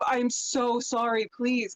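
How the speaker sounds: acted pleading, begging tone. Describing how people react, acting out someone pleading. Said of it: "and pleading like".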